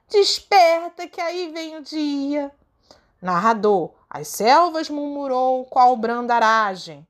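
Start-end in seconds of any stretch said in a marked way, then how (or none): 0.1-2.5 glad, joyful, loud calling-out cry. Reading a poem aloud, voicing the golden voice as it cries out. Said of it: "bradou voz de ouro".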